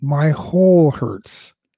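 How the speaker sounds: slow, loud, mock pained scream.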